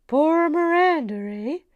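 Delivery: loud, high, belted-out Canadian accent. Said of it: "I love the Canadian accent".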